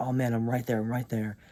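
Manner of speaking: plain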